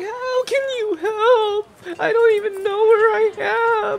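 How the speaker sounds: put-on very high, slow, drawn-out child's sobbing, long "i". Voicing a lost girl who asks how the other can help: lost girl crying. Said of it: "crying like that, sobbing".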